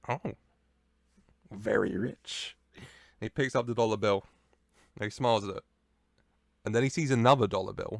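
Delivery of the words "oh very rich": rough, creaky, scraped-out voice. Acting out a wrestler walking backstage, gloating: Danhausen voice. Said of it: "And he's like".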